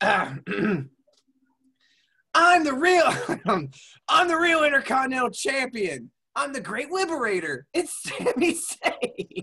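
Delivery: very high, slow, drawn-out voice. Doing wrestler impressions on a podcast: Sami Zayn impression. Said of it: "I get to do Sami Zayn".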